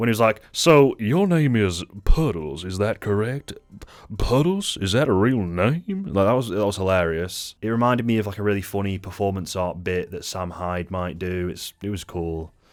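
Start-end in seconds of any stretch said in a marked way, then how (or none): 0.5-6.0 slow, drawn-out put-on southern drawl. Retelling a funny courtroom bit: imitating Joker's southern accent. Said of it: "put on a, like, southern accent when he was doing the trial".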